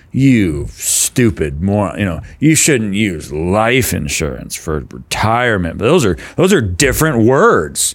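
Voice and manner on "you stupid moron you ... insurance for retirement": slow, heavily condescending, talking-down tone. Imitating an expert giving finance advice: imitating a condescending tone. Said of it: "It's so condescending".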